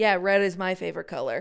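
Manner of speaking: normal talking voice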